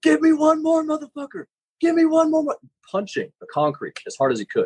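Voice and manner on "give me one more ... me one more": very high, fierce screaming. Retelling how a line coach yelled in a kid's ear at a competition, imitating someone screaming at a kid. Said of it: "screaming at this kid".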